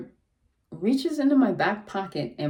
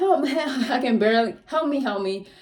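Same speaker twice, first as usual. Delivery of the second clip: mock desperate yelling, acted out, much higher pitch; 4 semitones higher than usual. Recalling being maced and lying on his stomach, retelling a desperate yell. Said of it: "I can only keep yelling so long".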